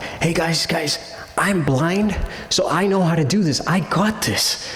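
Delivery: put-on calling out, loud and carrying. Retelling how a blind woman in the group yelled out: retelling a woman yelling out. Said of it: "she kinda yells out".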